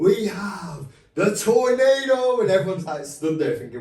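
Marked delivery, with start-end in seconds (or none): 0.0-2.4 loud, high-pitched scream, very slow. Retelling a man screaming right in the fighters' faces: retelling a scream. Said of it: "he's screaming".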